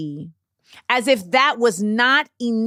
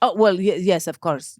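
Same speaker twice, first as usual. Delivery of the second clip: put-on thick German accent, much lower pitch; 3 semitones lower than usual. Speaker quoting a man's reply to them, fake german accent. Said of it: "I don't know how to do a German accent".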